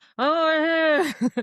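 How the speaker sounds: very high, muffled, drawn-out Oh. Retelling hearing a lost brother answer from hiding: imitating a muffled voice. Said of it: "I hear kind of this muffled".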